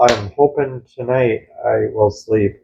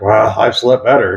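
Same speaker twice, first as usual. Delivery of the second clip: wry, ironic, dry sarcastic understatement. Showing how a remark can sound like complaining: sarcastic. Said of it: "If you're kind of sarcastic".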